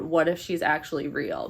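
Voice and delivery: ordinary talk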